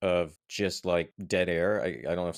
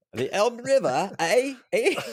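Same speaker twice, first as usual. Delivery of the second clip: sudden, very high, loud put-on English accent; 5 dB louder than usual. Speaker recounting a cycling trip, slipping into an English accent. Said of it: "All of a sudden I'm doing an English accent".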